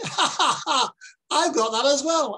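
high, slow, jeering mocking laugh. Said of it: "And he laughed at me".

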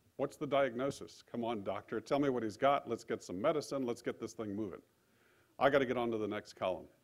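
ordinary talk, nothing marked

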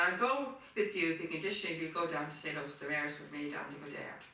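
ordinary delivery

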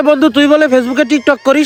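ordinary delivery

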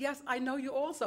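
usual speaking voice

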